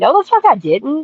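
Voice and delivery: put-on bewildered, puzzled, confused tone. Retelling a man answering from the bedroom, imitating a confused denial. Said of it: "like confused".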